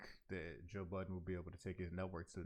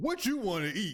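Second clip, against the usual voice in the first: harsh, very high, very loud shout; 14 semitones higher, 15 dB louder than usual. Showing the wrong way to ask someone what they want to eat: voice too loud. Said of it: "if your voice is too loud".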